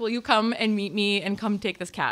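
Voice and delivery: plain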